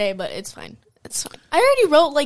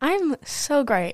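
fake, insincere-sounding, higher pitched; 4 semitones higher than usual. Greeting Daphne and asking how she is, sounding fake. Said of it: "my answer sounded fake".

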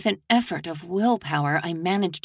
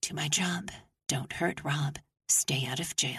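muttered quietly under the breath, quieter; 3 semitones lower, 8 dB quieter than usual. Reading a story aloud, the narrator mutters a mantra while cleaning: muttering under breath. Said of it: "mutter under my breath".

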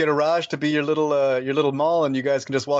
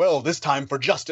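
over-boisterous put-on lawman voice. Describing a comic-book armored character, imitating his over-boisterous justice voice. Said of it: "he sounds like such this over boisterous justice".

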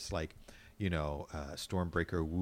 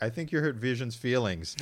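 ordinary talk

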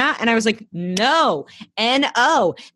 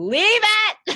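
mock, very high, shrill shout carrying across; 13 semitones higher than usual. Retelling what someone called from across the room: imitating a shout. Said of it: "Jeff from across the room, not even watching, goes".

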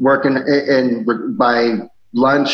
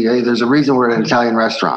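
ordinary delivery

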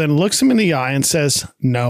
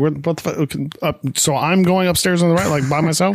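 ordinary talk

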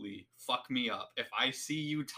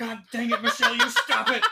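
put-on preacher scolding, higher and louder; 10 dB louder than usual. Imagining a preacher scolding someone munching during a funeral: imitating a preacher scolding. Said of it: "I'm imagining a preacher standing there".

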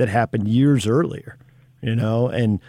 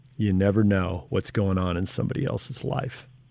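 put-on quiet voice, much quieter; 4 semitones lower, 7 dB quieter than usual. Retelling what a player who could project across the court said, imitating someone saying it quietly. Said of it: "but just really quietly saying".

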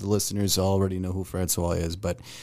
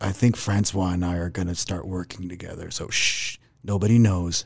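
pretend whispering. Announcing breaking news as a joking secret: mock whisper. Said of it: "I'm gonna have to whisper".

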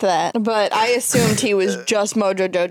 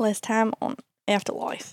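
put-on Australian accent, quieter; 7 dB quieter than usual. Trying again after coaching, opening the recap: attempted Australian accent. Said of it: "I'll just do Australian".

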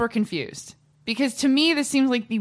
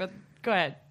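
giggly, laughing through the words; 3 semitones lower, 7 dB quieter than usual. Apologizing for laughing while another speaker starts talking: laughing while talking. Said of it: "I don't know why I'm laughing".

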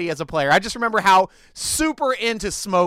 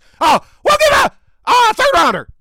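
put-on screaming excited dog voice, much higher, louder, slower; 8 dB louder than usual. Speaker acts out the Packers calling to trade for Claypool, in a put-on excitedly screaming dog voice. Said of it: "Like my dog screaming excitedly voice".

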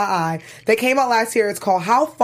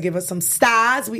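slow, put-on Boston accent. Asking podcast listeners to give stars, in a put-on boston accent. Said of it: "That's my Boston accent".

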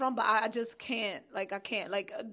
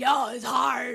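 loud, thrown-in fake Brooklyn accent; 6 dB louder than usual. Quoting what the manager said, in a put-on Brooklyn accent. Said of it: "but I gave him that accent".

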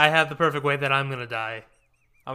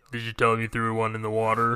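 put-on much older-sounding voice, lower pitch; 4 semitones lower than usual. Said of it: "you sound like you're a lot older".

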